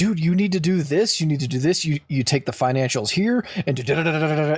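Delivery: pushy, forceful yelling, pressed hard. Retelling a first office day, on a call with the Houston people: retelling a yell. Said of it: "I'm yelling at this guy".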